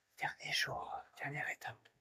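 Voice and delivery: speaking in a whisper. Speaking at six thirty while neighbours sleep nearby: whispering. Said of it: "Je chuchote parce que il y a mes voisins qui dorment".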